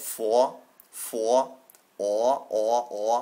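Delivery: awful New York accent, low and very drawn out. Explaining how a letter pair is pronounced, speaker uses a bad stereotypical new york accent. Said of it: "like stereotypical Boston or New York accent".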